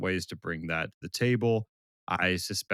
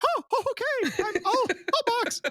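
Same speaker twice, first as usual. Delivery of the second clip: very high-pitched, squeaky cartoon voice; 3 dB louder than usual. A driver showing how he'd talk to irritate his race engineers, Mickey Mouse voice. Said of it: "Just start talking and Mickey Mouse".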